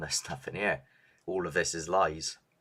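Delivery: ordinary delivery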